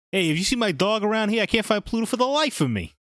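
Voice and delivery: high-pitched cartoon mouse voice with Brooklyn accent. Speaker showing how Mickey should have sounded in the game, Brooklyn Mickey Mouse voice. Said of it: "A Brooklyn Mickey".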